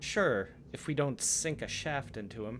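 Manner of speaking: lofty, arrogant, haughty elf voice, muttered. Voicing an elf who mutters a threat about an archer: arrogant, haughty elf tone. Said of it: "In that kind of arrogant, haughty, Elvish tone".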